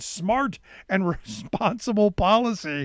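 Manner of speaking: slow, disbelieving, laughing through the words.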